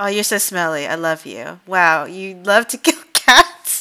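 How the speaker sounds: teasing affectionate tone. Voicing a dog person talking to their dogs: ribbing, loving tone. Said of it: "ribbing loving".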